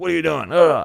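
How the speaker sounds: high-pitched scolding yell carrying across a room. Retelling a friend's story of her mom yelling at her dad: imitating a mom yelling. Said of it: "my mom just yells at him like".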